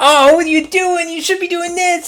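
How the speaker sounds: high, squeaky, mocking critic voice.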